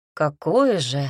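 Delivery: jealous tone. One of the cousins asks the new wife a question: jealous question. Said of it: "ревниво спросил один из кузенов".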